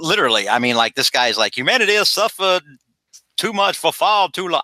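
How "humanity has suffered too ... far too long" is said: put-on Southern US accent at a very high pitch. Quoting a guy to the other speaker, slipping into a Southern accent. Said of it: "I don't know why I'm slipping into like a Southern accent".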